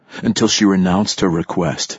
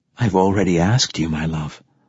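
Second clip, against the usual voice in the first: ordinary delivery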